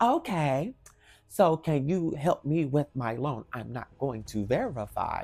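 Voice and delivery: very slow, put-on, falsely courteous, sarcastic professional tone. Retelling a rude caller's words: imitating a sarcastic professional tone. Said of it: "she starts using the sarcastic professional tone".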